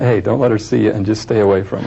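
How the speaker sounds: usual speaking voice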